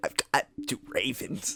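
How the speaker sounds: breathy, very hushed, barely above a whisper. Doing an impression of a politician in a mock debate: RFK Jr. impression. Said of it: "That's such a good impression".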